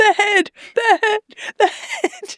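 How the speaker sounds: acted-out very high, panicked, repeated cry. Retelling how a trainee examiner reacted as the head rolled: imitating a frantic cry. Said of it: "she's jumping up and down going".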